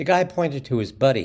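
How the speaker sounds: ordinary delivery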